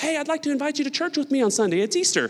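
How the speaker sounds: very high, honeyed, sweet, extra-polite tone. Showing how an invitation to church on easter comes out: politest, sweetest voice. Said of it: "in your politest, most sweetest voice".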